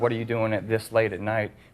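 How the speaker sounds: ordinary delivery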